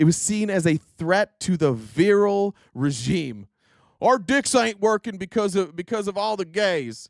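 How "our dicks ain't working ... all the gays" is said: Texan man voice. Discussing fascist views of manhood, doing an impression of a conservative man in Texas. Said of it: "That's my impression of of uh, somebody in Texas".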